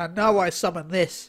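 put-on voice of a sixty-year-old man. Retelling a scene from an abridged show: imitating Yugi's old-man voice. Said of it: "then he transforms into the guy with the voice".

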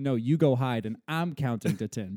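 usual speaking voice

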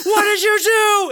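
very high, drawn-out, dragged-out screaming. Retelling trail camera footage of a man with a shotgun at a coyote, retelling a scream. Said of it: "he's screaming at it like".

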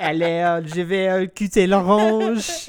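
put-on French voice. Imagining the other speaker slicing oranges, Ratatouille-style: mock French. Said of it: "I'm just imagining you like".

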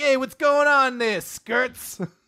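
put-on high New York gangster accent. Retelling a story where a talking hamster greets someone, new york gangster accent. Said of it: "he's just from New York or something".

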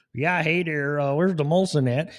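put-on Canadian accent. Imagining how the history books might quote the Canadians: mock Canadian voice. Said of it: "the Canadians".

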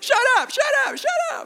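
shrill, thrilled, very high, excited swooping scream. Speaker contrasts his own deadpan reaction with a friend's, retelling excited screaming. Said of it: "jumped up and down screaming".

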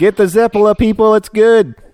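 very high shouting. Calling out to people passing by, recommending a food: yelling to passersby. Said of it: "I'm trying to yell at the people you're passing by".

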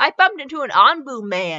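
ordinary delivery, nothing marked

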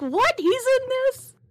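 high, squeaky, shocked disbelief. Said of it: "I was like".

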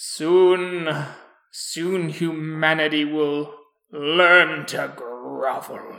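odd monster voice, soon stretched out, slow. Voicing a strange creature heard across the way: strange creature voice. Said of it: "you go towards the voice when you see this strange creature".

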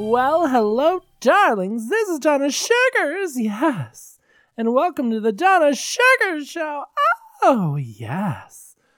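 very high, swooping hostess voice, "yes" stretched long. Opening a podcast episode as host Donna Sugars, in a high voice. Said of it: "That higherness is a little difficult".

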